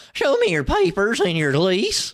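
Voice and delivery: crackly mocking hillbilly voice. Speaker imitates a woman he complains about, in a crackly mocking hillbilly voice. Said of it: "using that fucking crackly ass voice".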